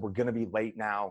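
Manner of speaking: put-on angry voice. Retelling what the mother said once angry: imitating mother angry. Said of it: "And she's mad at this point".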